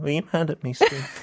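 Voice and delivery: put-on storybook orphan voice. Asking a partner again and again if they are mad: like a character from Oliver Twist. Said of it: "say it like you're a character from Oliver Twist".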